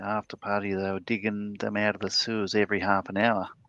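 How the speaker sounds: put-on Australian accent. Quoting a Monty Python skit, in a put-on Australian accent. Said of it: "I'm putting on an Australian accent".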